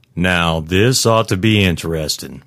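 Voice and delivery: ordinary talk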